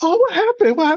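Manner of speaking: mock very high-pitched, upset, alarmed emotional voice. Retelling how Mom reacted to the wrapped finger: imitating emotional mom. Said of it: "kinda emotional".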